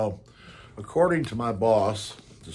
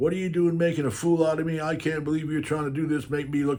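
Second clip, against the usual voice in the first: put-on angry yell, higher pitch; 6 semitones higher than usual. Retelling how a service manager reacted to the manual: imitating a manager yelling. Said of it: "He starts yelling at me".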